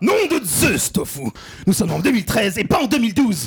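put-on excited scientist voice. Playing Doc Brown in a comedy sketch, scolding about the year: Doc Brown voice. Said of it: "Doc, Doc et Maître Brown de retour vers le futur".

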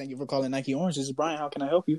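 put-on customer service phone-rep voice. Speaker acts out someone answering a work phone call, customer service voice. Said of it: "you hear that voice?".

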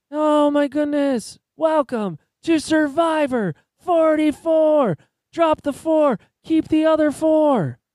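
very high, loud yelling, pitched way up. Showing someone your take on the Survivor host, do a Jeff Probst impression, yelling really loud. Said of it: "My Jeff Probst is just yelling really loud".

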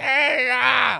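fake drunk old man voice. Acting out an old drunk guy in a bar complaining about the TV: imitating an old drunk guy. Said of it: "There'll be some old drunk guy in the bar".

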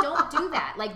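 loud, high-pitched, urgent tone.

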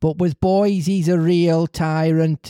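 put-on northern English accent, like Liverpool or Manchester. Reading a story aloud, voicing another speaker's remark about Geppetto, in a northern English accent. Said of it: "Liverpudlian and Mancunian accents".

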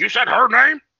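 imitated angry voice. Retelling a scene where the dad gets pissed off: imitating an angry dad. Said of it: "then the dad got all pissed off".

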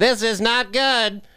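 grating, very high, slow cartoon computer voice. Describing a movie, the speaker imitates the little computer guy in an annoying cartoon voice. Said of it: "with that annoying voice".

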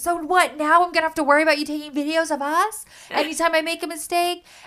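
play-acted, high, furious shouted yell. Recapping an episode where one woman yells at another, retelling an angry yell. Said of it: "And then Lisa just yells at her".

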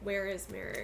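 ordinary talk

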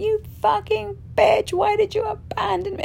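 mock screaming with voice up very high. Retelling a woman at her first ceremony screaming at the medicine; retelling a scream. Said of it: "she was like screaming at the medicine".

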